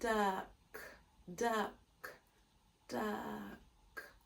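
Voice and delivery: each "duck" slow, deliberate and drawn out. Showing learners how to sound out a word: said slowly. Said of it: "Let's say it slowly".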